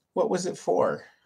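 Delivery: downcast, deflated, quiet dejected voice. Asking a guest a follow-up question, in a dejected voice. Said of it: "I love that like dejected voice".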